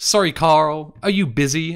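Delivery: really whiny, high-pitched and loud. In a game walkthrough, quoting Zero's phone call in a whiny Zero voice. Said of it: "In like a really whiny voice".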